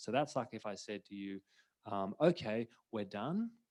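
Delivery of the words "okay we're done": pitch climbing at the end of "done". Illustrating an open, unresolved phrase: upward inflection at phrase end. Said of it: "if you end a phrase with an upward inflection like that".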